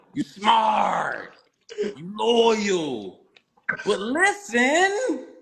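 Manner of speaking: very slow, swooping sing-song, "loyal" drawn out. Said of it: "in my [name] voice".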